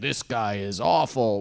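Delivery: deep, ominous, scary attack-ad narrator voice. Mocking the narrator of a political attack ad, in a deep scary voice. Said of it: "the deep, scary voice".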